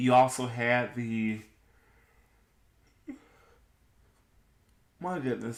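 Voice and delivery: talking while yawning, mid-yawn. Late at night, listing games for viewers, yawning. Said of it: "I'm sorry, I'm yawning".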